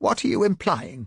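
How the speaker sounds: strained, twisted, contorted, high-pitched demanding voice. Earl, asked if his wife could be interviewed, demands an answer in a contorted, high-pitched voice. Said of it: "Earl demanded in a contorted, high-pitched voice".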